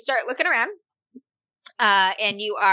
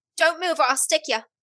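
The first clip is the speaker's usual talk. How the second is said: put-on high, heavy Irish accent. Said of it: "She has an Irish accent, heavy Irish accent".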